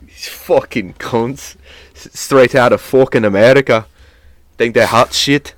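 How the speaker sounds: put-on Irish accent. Imagining how an Irish man would react to Americans, imitating his Irish accent. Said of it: "with like his actual Irish accent".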